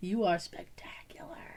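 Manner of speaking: breathy, very hushed, creepy whispered delivery. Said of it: "that's kinda creepy to whisper".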